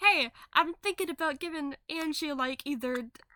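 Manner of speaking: ordinary delivery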